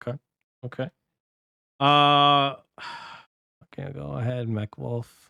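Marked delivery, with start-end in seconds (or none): 3.7-5.3 soft, sighing disappointment. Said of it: "You sound so disappointed".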